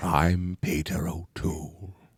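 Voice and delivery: British accent, pitched low and deep. Doing a British accent as a named actor: Peter O'Toole impression. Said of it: "I could do it as Peter O'Toole".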